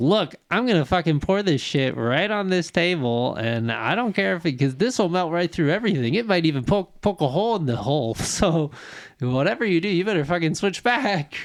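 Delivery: cocky, brazen, full of sass. Retelling how Kirk outs the creature: imitating Kirk with sass. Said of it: "with some sass".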